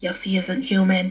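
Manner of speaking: whispered words. Voicing a character telling another a secret, whispering in character. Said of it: "whispers and looks around and is just like".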